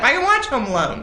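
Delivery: normal talking voice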